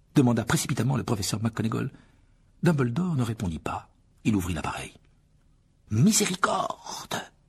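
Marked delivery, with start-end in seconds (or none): 5.9-7.1 high-pitched whispered cry. Madame Pomme Fraîche, as Dumbledore opens the camera, whispered. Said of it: "chuchota Madame Pomme Fraîche".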